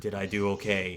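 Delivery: quiet, hushed, cautious, careful whisper. Voicing Otto asking Arkara if he did well: quiet cautious whisper. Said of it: "Otto whispers towards Arkara, quietly, cautiously".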